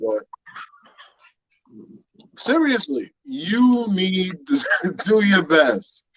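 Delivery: slow delivery, breaking into laughter mid-line. Giving grooming advice, trying to keep a straight face: laughing while talking. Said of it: "I can't even hold it".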